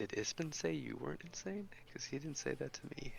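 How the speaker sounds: very quiet, ashamed and embarrassed. Nudging Korg and asking him a question: very quiet, ashamed. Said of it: "I say this very quietly, kind of ashamed".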